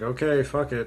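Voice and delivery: ordinary delivery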